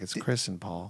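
soft, slow public radio voice. Pretending to host a radio show together: mock NPR host voice. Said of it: "You and I could do an N P R show".

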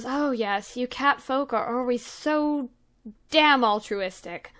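weary, tired delivery, sighed out. Voicing a demon who sighs at a cat folk player: sighing. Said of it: "And she sighs and goes".

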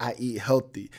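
low, level, flat one-note drone. Mimicking how a woman sounded when she answered, imitating her flat monotone. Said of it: "that's literally, like, how she sound, like, on some, like, real, like, monotone".

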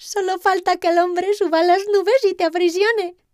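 amazed, half-laughing, very high voice. Narrator reading the wind's reply to the captive lightning, laughing and astonished. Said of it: "dijo el viento entre risas y asombro".

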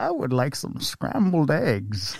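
supervillain voice, pitch swooping up and down. After boasting about the impression to the group: Bane voice. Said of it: "I have a pretty good Bane impression".

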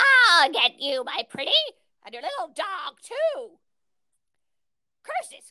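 put-on wicked witch voice, shrill and loud. Doing a series of quotes on a lockdown podcast: witch voice. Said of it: "now we have the witch, a series of witch".

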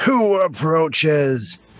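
booming, gravelly, bellowing creature voice. Narrating a story, a cracked stone golem calls out: big gravelly bellowing voice. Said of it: "the bigger gravelly voice sort of bellows out".

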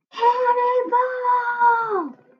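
very high, slow, stretched-out shout.

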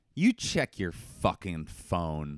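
put-on fed-up snap, low and dead serious. Retelling what the partner said when asked the time: imitating partner's serious snap. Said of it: "It was a serious".

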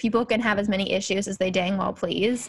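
ordinary talk

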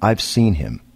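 grave, utterly earnest, dead serious tone. Retelling what a woman said about seeing the hitchhiker: imitating a dead serious tone. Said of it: "she looked at me dead serious and went".

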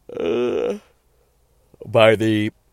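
talking through a yawn. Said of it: "I had to really yawn".

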